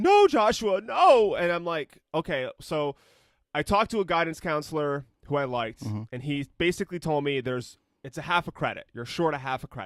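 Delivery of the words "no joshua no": acted, crazed, uncontrolled, high, loud emotional outburst. Retelling his mom's reply after he told her to calm down, imitating mom's crazy emotion. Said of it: "like uncontrollable emotion".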